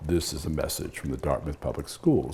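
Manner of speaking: voice brought down in pitch. Showing how a school phone message sounded, the speaker reads it in a lowered voice. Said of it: "So you just lower the voice".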